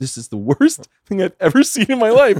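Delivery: put-on, very high, hysterical wail through tears. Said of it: "she was hysterically crying".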